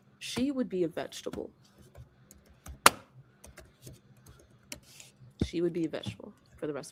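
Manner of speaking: speech broken up by laughter. Explaining a mother's critical condition, laughing while talking. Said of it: "And I don't mean to laugh".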